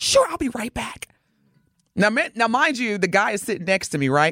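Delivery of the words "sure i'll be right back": mock eager, bright, chipper service voice, all cheer. Retelling a flight attendant's reply: imitating a chipper flight attendant. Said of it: "She was so chipper".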